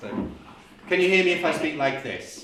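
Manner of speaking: loud, belted, projected unmiked voice. Testing whether the back of the room can hear, belting without a microphone. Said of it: "but I will belt it".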